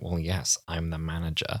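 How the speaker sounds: acted low, flat deadpan delivery. Recalling a lizard at the front desk in a future London, imitating deadpan lizard manager. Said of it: "the deadpan way this Silurian comes back".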